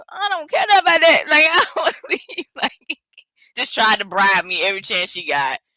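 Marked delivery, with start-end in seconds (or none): 0.2-2.5 very high, loud, tearful crying. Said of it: "'Cause I was just crying".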